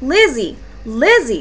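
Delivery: ordinary delivery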